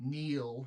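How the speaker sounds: authoritative, commanding tone on a single word. Giving a creature a one-word order in character: commanding voice. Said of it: "in a commanding voice".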